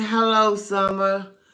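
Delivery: loud hollering, yelled scream. Retelling a woman in a video yelling at the windows: imitating someone screaming.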